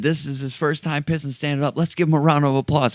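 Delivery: mock high, loud announcing yell. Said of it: "he starts yelling".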